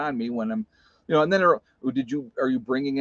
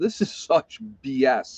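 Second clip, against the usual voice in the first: slow, play-acted, fed-up, angry flipping-out outburst. Telling how they reacted to being told to turn themselves in: retelling flipping out. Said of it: "I was flipping out".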